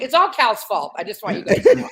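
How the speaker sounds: laughing while speaking.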